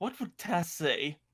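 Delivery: ordinary delivery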